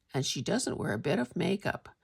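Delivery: ordinary talk, nothing marked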